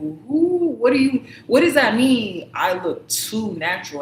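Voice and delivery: put-on, really upset delivery, drawn-out "who". Retelling a reply to a man's remark at the store: imitating one's own upset reply. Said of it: "I was really upset".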